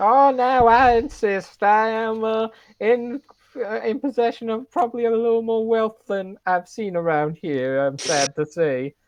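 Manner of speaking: put-on very slow, very drawn-out elderly old woman voice. Playing an old woman ordering drinks for everybody: old woman character. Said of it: "an old woman like you".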